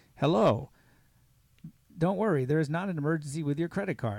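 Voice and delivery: loud, robotic, recorded automated phone voice. Retelling a scam call, the speaker imitates its automated voice. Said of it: "it's an automated voice".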